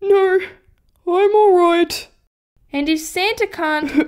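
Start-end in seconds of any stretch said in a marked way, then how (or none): 0.0-2.1 sniffly, sniffling voice. Asked if he's crying, [name] answers while sniffling. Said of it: "(Sniff, Sniff)".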